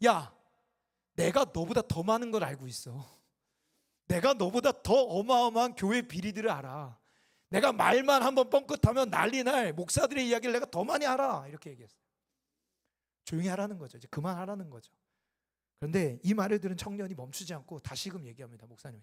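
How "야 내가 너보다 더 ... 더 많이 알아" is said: fed-up, heated, irritated voice, high and slow. Retelling how a pastor snapped back at a young man, mock-angry outburst. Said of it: "열받아가지고 이 청년한테 뭐라면".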